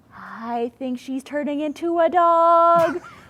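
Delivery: very slow, high-pitched, last word drawn out. Retelling a remark made in a silent theater: imitating someone speaking very quietly. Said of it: "Like, really, really quietly".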